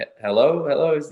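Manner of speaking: put-on unsure, stumbling delivery. Retelling answering a call from an unsaved number: imitating a hesitant answer. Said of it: "answer it with a little bit of he-, hesitation".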